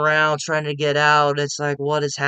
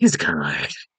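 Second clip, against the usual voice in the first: low, mocking delivery in a dropped voice. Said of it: "it's like".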